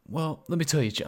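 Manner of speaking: news reporter delivery. Asking about the week, then answering it in a news reporter voice. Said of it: "It just sounds like a news report".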